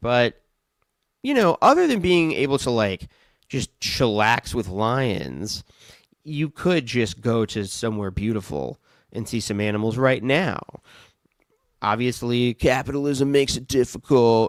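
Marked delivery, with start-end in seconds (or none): 11.8-14.5 put-on goofy dumb-guy voice. Mid-conversation, the speaker tosses off one remark in a dumb guy voice. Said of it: "I said it in like a dumb guy voice".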